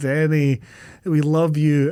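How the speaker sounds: normal talking voice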